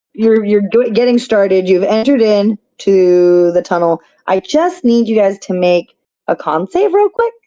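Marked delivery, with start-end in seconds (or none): 4.3-7.3 bright, chipper, friendly sing-song voice. Asking the group to make a con save, in a cheery voice. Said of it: "Just in that cheery voice".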